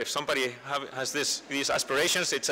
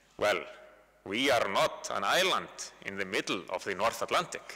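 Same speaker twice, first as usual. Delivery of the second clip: strong put-on Finnish accent, lower pitch; 5 semitones lower than usual. Quoting Koivisto's reply to a question about why the Finns were more cautious, in Koivisto's strong Finnish accent. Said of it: "in a strong Finnish accent".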